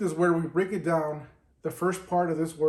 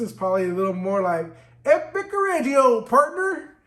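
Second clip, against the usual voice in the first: loud, laid-on put-on South Texas accent; 6 semitones higher, 5 dB louder than usual. Demonstrating how a word sounds with a South Texas accent. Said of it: "down south Texas".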